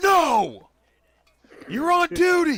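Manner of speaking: very high, very loud yell.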